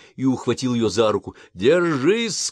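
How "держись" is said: desperate, high, urgent yell. Grabbing her by the hand, a man is shouting to her. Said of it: "крикнул он".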